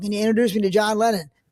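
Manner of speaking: normal talking voice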